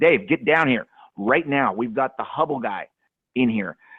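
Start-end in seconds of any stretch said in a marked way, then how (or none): none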